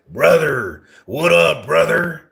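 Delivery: loud, hyped-up pro-wrestler voice. Joking with a buddy, announcing the bit first: Hulk Hogan voice. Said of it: "Hulk Hogan voice".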